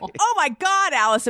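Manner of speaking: put-on high Chicago accent. Retelling what a friend said after a scare: imitating Angie's Chicago accent. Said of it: "But she had a Chicago accent".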